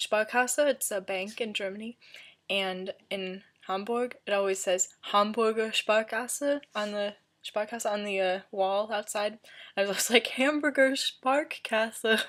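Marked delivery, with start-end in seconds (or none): 10.3-12.2 overdone, exaggerated, put-on American accent. Retelling reading a bank sign in Hamburg: American accent impression. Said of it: "that's my American impression".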